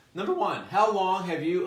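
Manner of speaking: breaking voice that cracks. Reading the first question in a list to the audience, voice cracking. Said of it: "my voice cracked".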